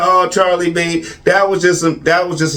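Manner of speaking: ordinary talk, nothing marked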